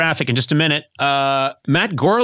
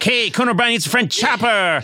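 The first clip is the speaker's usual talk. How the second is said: a higher-pitched voice like a radio traffic announcer. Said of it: "And I'm just like".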